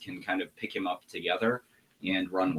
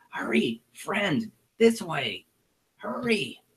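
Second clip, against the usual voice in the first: very high, urgent small creature voice; 11 semitones higher, 4 dB louder than usual. A kobold guide leads the party down a long hallway, urgent Meepo kobold voice. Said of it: "[name] the Kobold is sometimes played by Mr. / no look good. Follow me. I have friend help. / And he heads down this way. / And he heads down this way".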